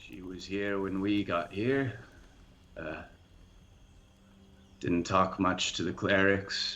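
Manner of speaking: sorrowful, mournful, sad, downcast voice. Narrating a scene for the players and speaking as Ogmund, Ogmund's sad voice. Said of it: "a sad voice".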